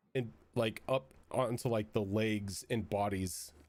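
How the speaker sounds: ordinary delivery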